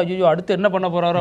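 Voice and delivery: normal talking voice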